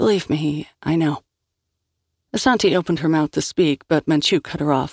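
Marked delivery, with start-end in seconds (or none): 0.0-1.2 very soft and slower. In a silent van, Sal answers an accusation very softly. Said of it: "sal said very softly".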